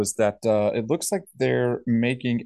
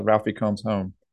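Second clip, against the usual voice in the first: usual speaking voice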